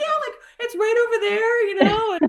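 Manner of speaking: very high, giggly, bubbly, exuberant voice. Retelling own answer to a camper after the swim: imitating own giggly exuberance. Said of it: "in the giggles and the fit of exuberance".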